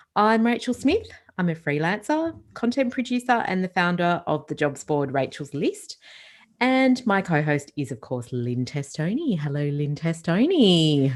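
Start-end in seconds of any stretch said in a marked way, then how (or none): 9.4-11.2 broadcast radio announcer voice. A host greets her co-host at the start of the show: radio announcer voice. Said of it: "like a radio announcer type voice".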